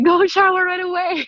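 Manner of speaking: high-pitched mock yell. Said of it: "I have to yell at them".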